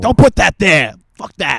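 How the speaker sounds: put-on furious voice. Retelling a mom scolding the uncle for bringing soup: imitating a furious mom. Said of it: "it made my mom too furious".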